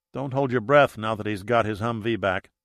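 plain reading voice

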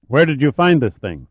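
ordinary delivery

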